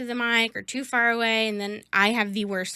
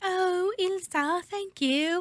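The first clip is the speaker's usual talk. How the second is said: horrible, clumsy fake British accent, drawn way out; 10 semitones higher than usual. Retelling how a woman with a British voice replied, bad British accent impression. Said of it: "horrible impersonation".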